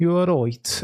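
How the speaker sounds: attempted Birmingham accent. Host greeting co-hosts before F1 talk, trying a Birmingham accent. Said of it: "do my best Birmingham accent".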